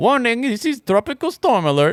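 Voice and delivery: put-on Indian accent pitched very high. Imitating the storm alert voice his friend took for an indian man, indian accent. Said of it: "my friend thought that was an Indian dude".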